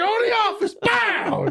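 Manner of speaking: high, shouted, mock yelling bark.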